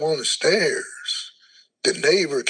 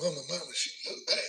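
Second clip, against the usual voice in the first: play-acted, soft weeping, crying voice; 12 dB quieter than usual. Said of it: "I'm running behind the truck crying".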